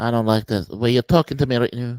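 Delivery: put-on leprechaun-like voice. Object to how the other person is talking to you, in a Conor McGregor impression. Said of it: "I'm doing my Conor McGregor".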